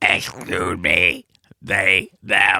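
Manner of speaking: toneless, flat, slow synthetic AI voice. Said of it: "That's what A I sounds like".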